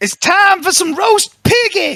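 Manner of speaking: acted yell, pitched way up high. A player announces an in-game action and yells it in character: in-character yell. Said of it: "I'm gonna yell".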